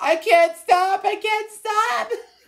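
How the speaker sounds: very high, sobbing, anguished crying wail. Describing a man who turned himself into a blueberry, imitating someone crying. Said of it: "it's like he's crying and suffering".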